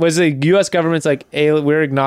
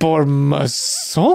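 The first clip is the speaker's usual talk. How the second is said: put-on drunk voice, pitched deep. Imitating Orson Welles drunk in his wine commercials: imitating drunk Orson Welles. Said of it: "he's been drinking it all day".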